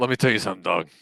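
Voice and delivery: very loud, barreling, booming put-on bellow. Pretending to be a caller during a podcast: Joey Diaz impression. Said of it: "it's Joey Diaz".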